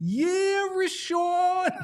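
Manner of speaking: put-on very high-pitched yell in a Philadelphia accent. Recalling a fan who sat behind them, the speaker retells her Philadelphia-accent yell. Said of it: "in a great Philadelphia accent would yell".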